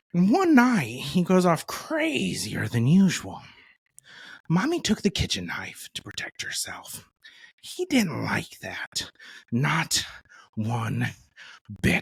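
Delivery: put-on impression voice that drops to a whisper. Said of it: "was the Heath Ledger Joker".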